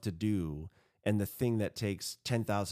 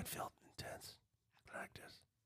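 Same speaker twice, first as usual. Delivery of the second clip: unvoiced, hushed whisper. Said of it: "Why are you whispering?".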